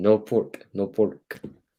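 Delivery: slow put-on Arabic accent, words spaced out. Imitating Jake refusing pork: Arabic accent imitating Jake. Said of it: "he has an Arabic accent".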